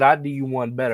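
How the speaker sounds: usual speaking voice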